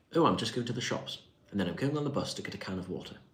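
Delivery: put-on posh, well-spoken English accent. Reacting to a comment about a typical uk accent, demonstrating: well-spoken english accent. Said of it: "well spoken English when you talk like this".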